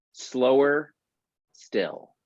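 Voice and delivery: very calm, serene, wise-sounding voice. Retelling advice from a man of few words, quoting him calmly. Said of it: "I heard this so calm".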